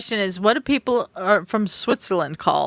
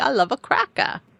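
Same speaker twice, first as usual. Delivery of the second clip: put-on Rhode Island accent; 4 semitones higher than usual. The speaker imitates a woman quoting someone's favorite saying, imitating a Rhode Island accent. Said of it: "the Rhode Island accent and her accent".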